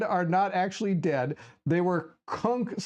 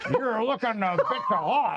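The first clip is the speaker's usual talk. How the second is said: put-on pirate accent; 3 semitones higher than usual. In a role-play, a player voicing Cookie uses a pirate accent. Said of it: "you gotta have a pirate accent".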